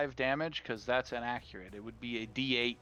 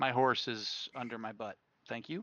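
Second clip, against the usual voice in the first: ordinary talk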